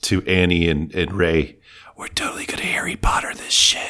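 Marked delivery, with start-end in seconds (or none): 2.0-3.9 hushed, quiet whisper. Whispering a plan to two other characters in the game: whispering quietly. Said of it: "I whisper quietly to".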